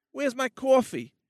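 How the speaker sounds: demanding New York accent. Suggesting accents to try, demonstrating a New Yorker in a New York accent. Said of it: "You could do a New Yorker thing".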